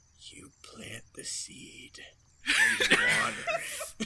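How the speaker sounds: hushed, quiet whisper, close to the ear. Whispering advice into a companion's ear: quiet whisper. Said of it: "very quietly whisper into Darian's ear".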